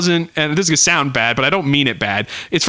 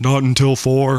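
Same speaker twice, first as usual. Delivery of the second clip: put-on dim cartoon character voice, lower; 5 semitones lower than usual. Quoting a cartoon line after mentioning a practised voice: Patrick voice. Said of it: "my Patrick voice".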